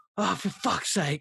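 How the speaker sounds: put-on frustrated, exasperated voice with Australian accent. Retelling a character's reaction to missing a turnoff: imitating a frustrated Australian. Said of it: "That's the most Australian thing".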